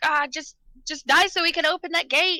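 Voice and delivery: hard, high-pitched screaming yell. Playing a character mid-fight: screaming at an enemy. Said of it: "I'm just screaming at it".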